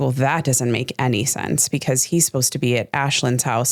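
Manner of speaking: usual speaking voice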